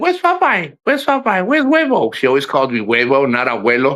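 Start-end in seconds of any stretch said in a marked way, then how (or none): 0.0-2.1 put-on rattled-off, quick, very high little-kid toddler voice. Retelling how little Brooklyn asked for Popeye: imitating Brooklyn, quick. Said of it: "She just like".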